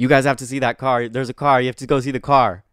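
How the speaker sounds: put-on light, half-voiced yelling. Retelling what a guy on a bike shouted: imitating someone yelling. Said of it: "he was just yelling".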